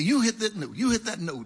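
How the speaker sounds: sharp, barked speech.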